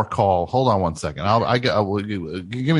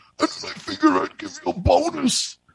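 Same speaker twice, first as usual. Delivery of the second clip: very high, creaky, exaggerated put-on boss voice. Mocking how people quote their boss in stories, put-on storytelling boss voice. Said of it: "they never say a good thing when they do that voice".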